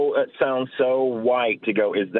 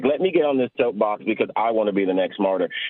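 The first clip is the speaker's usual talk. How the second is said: ordinary talk, nothing marked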